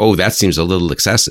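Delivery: ordinary talk, nothing marked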